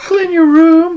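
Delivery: shrill, very loud voice. Voicing a virtual assistant as Jordan Peterson: Jordan Peterson voice. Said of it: "The Jordan Peterson".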